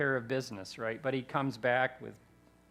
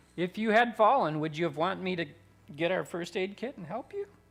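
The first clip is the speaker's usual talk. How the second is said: pointed, dripping sarcasm, swooping sing-song; 6 semitones higher, 4 dB louder than usual. Retelling a thought after a churchgoer almost fell: imitating own sarcastic thought. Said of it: "that's me being sarcastic".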